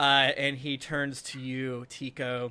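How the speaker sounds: ordinary delivery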